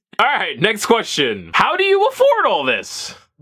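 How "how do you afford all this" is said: voice breaking up and cracking very high. Reading out the next question in a q&a, voice cracking. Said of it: "Why did my voice just crack?".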